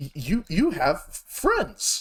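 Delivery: stuttering robot voice. Voicing a sparking robot noticing the visitors: glitching robot voice. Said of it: "he sparks a bit from his neck".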